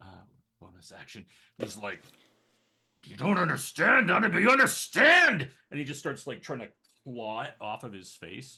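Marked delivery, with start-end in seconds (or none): 3.0-5.5 raging, shrill, very high, very loud scream. Voicing a raging character clawing at his face: raging character. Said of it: "So he rages".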